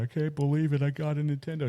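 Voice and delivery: put-on high, sobbing child's voice, blubbering through tears. Retelling a video where a kid sobs over a gift: imitating a crying kid. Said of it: "He's just, like, crying".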